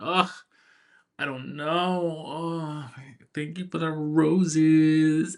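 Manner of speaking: put-on coy, flirty voice. Describing a show preview, the speaker acts out the woman, mock-coquettish. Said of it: "she's playing the very coquettish".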